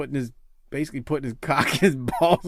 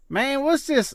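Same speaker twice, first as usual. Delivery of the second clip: put-on Tennessee accent, pitched way up high; 12 semitones higher than usual. Speaker retells a man's reaction to tweets about Ronnie, Bo's Tennessee accent. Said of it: "Bo in that Tennessee accent is like".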